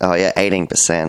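ordinary talk, nothing marked

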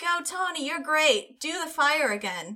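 excited high call. Voicing a character cheering from the front of the crowd: yelling in character. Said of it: "kind of yell".

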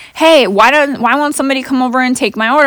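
mild calling out. Retelling a man yelling at the workers behind the counter: retelling a man yelling. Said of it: "he's like yelling at the workers".

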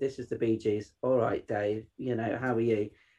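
put-on flat, dull delivery. Showing how a radio link should not sound, imitating a dull flat delivery. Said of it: "for a start, it's dull".

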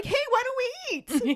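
very high, awkward voice pushed up high. Speaker retells an awkward moment, doing Bill's line as a high-pitched Bill voice. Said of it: "I like to imagine his voice got that high".

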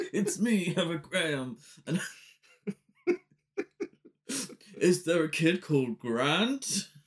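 put-on tough, masculine voice. Retelling a scene where Heather Graham puts on a voice, butch Heather Graham voice. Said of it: "She puts on a butch voice".

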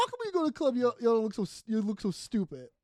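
put-on sassy, teasing woman voice. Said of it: "she's being, like, sassy and zingy".

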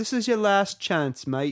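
amateurish put-on British accent, slightly high. Speaker tries an accent again for a co-host who keeps rejecting it, attempted British accent. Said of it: "Any better?".

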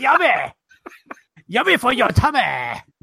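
put-on jokey North Korean accent. Riffing with another speaker, mock north korean accent. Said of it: "That was my North Korean accent".

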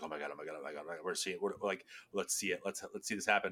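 soft, hushed, thrilled gushing. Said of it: "and I was like".

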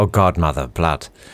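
muttering under breath. Describing what the speaker says in every conversation: muttering to self. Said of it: "I'll just mutter to myself".

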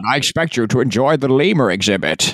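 put-on villain voice with a Scottish accent. Imagining a Bond villain threatening the podcasters, doing a Sean Connery impression. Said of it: "being threatened by Sean Connery?".

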